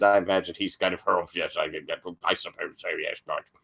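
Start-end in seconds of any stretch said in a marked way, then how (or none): 1.3-3.4 put-on posh dog voice, lower and quieter. Voicing the party's dog answering a player: rough Nigel Thornberry voice. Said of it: "If I could do a Nigel Thornberry voice".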